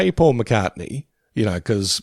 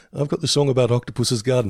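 plain

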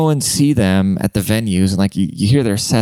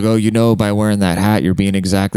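ordinary talk

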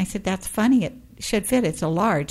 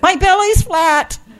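shrill, very loud, high-pitched shout; 12 semitones higher, 9 dB louder than usual. Retelling coming out of a store dressing room: retelling own past shout. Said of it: "And I shouted".

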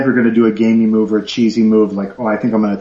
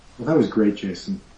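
dry, mocking, insincere sarcastic praise; 8 dB quieter than usual. Reacting after another speaker finishes talking: sarcastic. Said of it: "Don't be sarcastic".

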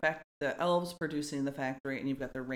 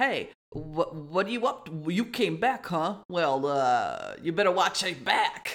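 put-on 1920s Jersey gangster voice, much higher; 4 semitones higher, 7 dB louder than usual. Recapping Rudolph, imitating the adult male reindeer greeting Rudolph, 1920s Jersey gangster voice. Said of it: "sounds like a gangster from Jersey in the 20s".

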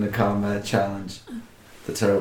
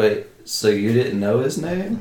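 ordinary talk

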